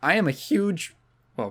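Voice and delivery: voice cracking. Talking about an SNES platformer, the speaker's voice breaks, voice cracking. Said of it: "voice crack".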